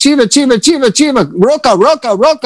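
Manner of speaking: acted shouting. Retelling calling out toward a spot by an apartment, reenacting yelling. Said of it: "I'm yelling it".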